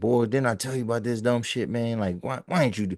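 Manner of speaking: angry, disappointed, reproachful told-you-so scolding tone. Voicing what a relative in a photo seems to say: voicing an angry, disappointed relative. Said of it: "He looks angry and disappointed".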